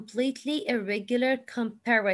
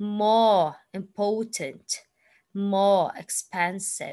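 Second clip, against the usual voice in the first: slow British accent, r dropped from more. Demonstrating pronunciation for learners, in a British accent, no final R. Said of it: "we don't say the R sound".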